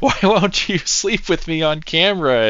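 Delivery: put-on shrieking yell, very high-pitched. Retelling a meme about a sex scene, imitating Yennefer yelling. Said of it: "Yennefer yelling at him".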